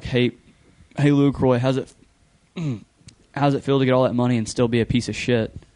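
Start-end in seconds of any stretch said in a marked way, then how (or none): none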